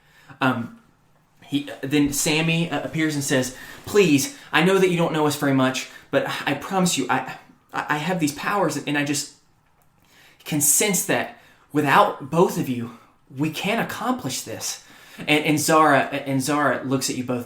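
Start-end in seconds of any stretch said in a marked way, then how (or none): 3.9-14.9 anxious, jittery elf voice, stumbling over words. Voicing a nervous elf who begs the group for help: nervous elf voice. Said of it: "who's the nervous elf".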